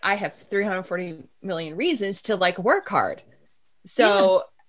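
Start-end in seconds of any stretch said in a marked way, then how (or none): none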